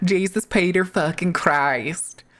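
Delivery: slow, shoddy, put-on Midwest accent. Speaker riffing on a phrase, saying it in a shitty midwest accent. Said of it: "a shitty Midwest accent".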